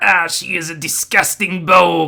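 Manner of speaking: put-on horrible French accent, slowly. Retelling a scene from the episode in a horrible french accent. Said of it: "he does this horrible French accent".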